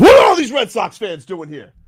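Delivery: put-on irritated, lashing-out yell, high and swooping. Retelling how Tommy Hutton yelled about Red Sox fans: imitating Tommy Hutton yelling. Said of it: "Tommy Hutton was yelling at me".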